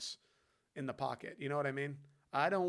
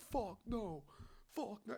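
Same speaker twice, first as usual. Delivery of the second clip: put-on yelling, pitched higher; 7 semitones higher, 6 dB quieter than usual. Retelling a sideline clip of Patrick Mahomes: imitating Patrick Mahomes yelling. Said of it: "He was yelling".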